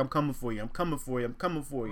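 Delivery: ordinary delivery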